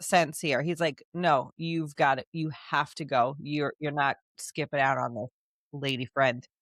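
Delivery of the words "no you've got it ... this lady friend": mock forceful, vehement, insistent tone. Retelling what Tal tells Saris about attending the ball: imitating Tal, vehement. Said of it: "Tal is vehement that Saris attends".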